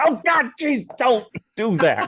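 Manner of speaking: put-on very high, spooked, swooping, drawn-out voice. Retelling scaring someone at a convention: imitating Alex Lee freaked out. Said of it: "it just freaked him the f-, he was just like".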